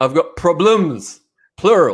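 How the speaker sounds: put-on slow British butler accent and manner. Quoting a favourite line from the movie Four Rooms, British butler accent. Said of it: "it's the British butler or front desk person".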